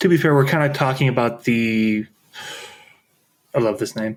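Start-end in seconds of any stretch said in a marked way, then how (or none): 3.5-4.2 heavy, dry sarcasm, clearly insincere. Introducing the name of an ogre group from the book: sarcastic. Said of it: "I say sarcastically".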